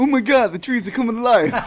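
deliberately terrible voice, very high and loud. Joking before the podcast with a terrible Mark Wahlberg impression. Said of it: "My terrible Mark Wahlberg impression".

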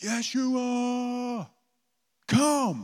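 very high top-of-lungs yell, first word drawn out. Retelling how a man yelled out a prayer: imitating a yell at the top of his lungs. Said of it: "just yelled at the top of his lungs".

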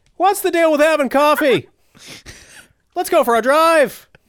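put-on slight Irish accent, very high. Voicing a demon in a joking bit, sounding a little too irish. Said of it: "That sounded a little too Irish".

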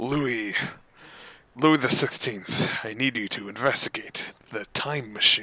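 soft, gruff, regal commanding tone. Voicing King Croken-bush giving an order, in a gruff King Croken-bush voice. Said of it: "I'll just give him a gruff voice".

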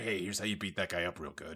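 secretive, soft, hushed half-whisper, very close and intimate. Retelling a movie scene where Bruce Wayne half-whispers to a fighter: imitating a half-whisper. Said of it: "who just whispers into his ear".

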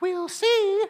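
very high, eerie, creepy witch voice. Retelling what she answered before scurrying away, in a creepy witch voice. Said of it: "in a really kind of creepy witch-like way".

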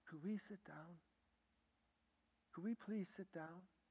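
soft gentle voice. Retelling how he answered people screaming over him; retelling a gentle tone. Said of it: "Just that tone".

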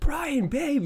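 mock very high shriek at the top of the lungs. Retelling hearing Becca call out while he walked the dogs, imitating Becca's full-lung yell. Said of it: "just yelling at the top of her lungs".

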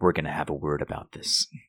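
whispered, hushed, breathy mutter under the breath. Voicing a character in the game scene, muttering. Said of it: "you just hear Helix muttering".

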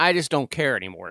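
ordinary delivery

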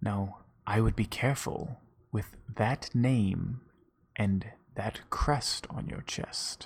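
hushed, slow, drawn-out whisper. Voicing a character who pulls a player close while shaking hands: whispering. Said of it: "he just whispers to you".

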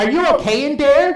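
put-on very loud, very high Dutch accent. Retelling a voice calling through the door, in a loud dutch voice. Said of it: "this loud Dutch voice is going".

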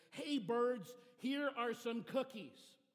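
loud, high, drawn-out shout in a big voice. Reading a story: Frog calls out to the birds, shouting loudly. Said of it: "shouted in a loud voice".

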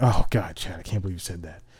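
put-on disgust. Retelling a friend's reaction to his joke in class, mock-disgusted. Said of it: "she got this disgusted look on her face".

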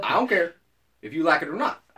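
attempted, mock put-on Southern accent. Podcast hosts trading a joking bit, trying a Southern accent. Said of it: "when you're trying to do a southern one".

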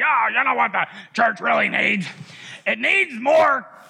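creaky, rough speaking manner. Speaker retells what a man said: imitating the man's way of talking. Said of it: "and he talked like this".

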